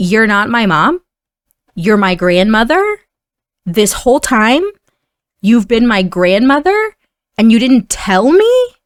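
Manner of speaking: put-on fast, furious, angry scolding. Playing a game and reading a character's line to viewers, angrily laying into her. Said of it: "he's basically just like laying into her".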